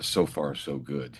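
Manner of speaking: slow, hushed, half-whispered reporter-style delivery. Retelling what an agent in the next seat said: imitating a half-whisper. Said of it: "he whispers into his microphone".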